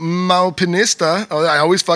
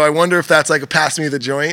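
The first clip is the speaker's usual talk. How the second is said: plain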